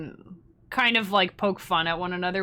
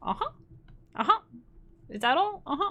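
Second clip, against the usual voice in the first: terrible fake Chinese accent, pitched up; 8 semitones higher than usual. Speaker admits it's hard not to do the accent, horrible Chinese accent. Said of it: "A horrible, terrible Chinese accent".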